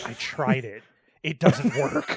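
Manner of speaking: slow muttered aside, half under the breath. Imitating the same girl admitting she tried it: imitating a mutter under her breath. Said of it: "under her breath".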